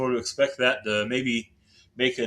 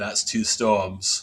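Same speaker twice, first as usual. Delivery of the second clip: unconvincing, botched attempt at an Australian accent; 4 semitones lower than usual. Comparing colliding storms to a nineties movie, the speaker does a bad Mel Gibson Australian accent. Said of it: "That was the worst Australian accent".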